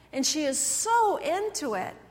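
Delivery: ordinary talk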